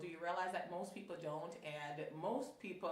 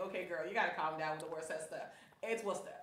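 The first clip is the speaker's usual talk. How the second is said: normal talking voice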